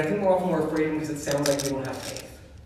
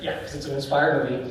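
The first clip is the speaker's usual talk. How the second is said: ordinary delivery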